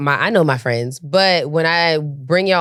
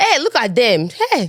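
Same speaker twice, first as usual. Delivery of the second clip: voice calling over to someone nearby; 8 semitones higher than usual. Asked to show how their mom acts, imitating their mom. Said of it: "She be like".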